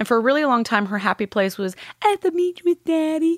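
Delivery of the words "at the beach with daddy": put-on very high, childlike little-girl voice. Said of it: "her voice. Exactly".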